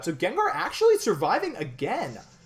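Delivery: high-pitched, swooping, sing-song play-by-play voice. Commentating a Pokémon battle as Gengar survives again, voice going high. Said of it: "my voice got so high".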